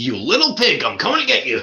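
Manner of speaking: put-on angry ranting voice. Quoting an infamous angry voicemail: imitating Alec Baldwin angry. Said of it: "He's so angry".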